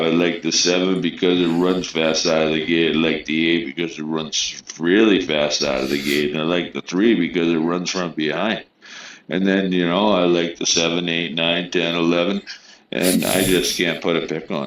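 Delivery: normal talking voice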